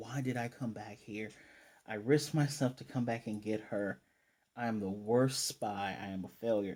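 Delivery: plain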